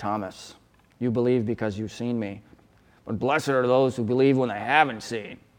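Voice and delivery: cutting, harsh, scathing, scolding tone. Acting out a reading of the story where a finger is pointed: acting out a scathing rebuke. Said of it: "a scathing rebuke".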